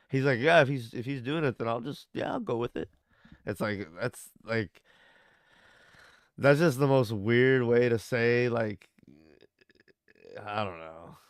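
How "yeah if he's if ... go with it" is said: acted lukewarm, offhand, casual, nonchalant indifference. Retelling how someone spoke about Jesus saving people: imitating a nonchalant tone. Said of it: "so nonchalantly".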